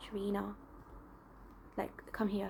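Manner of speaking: very quiet, hushed, low, grandmotherly whisper. Retelling how granny used to call out a name: imitating granny's quiet low-pitched voice. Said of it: "quiet tone, um, low pitch voice".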